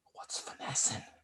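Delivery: very quiet, hushed whisper. Retelling quietly asking the person sitting next to them: imitating asking quietly. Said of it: "looked at the person next to me very quietly".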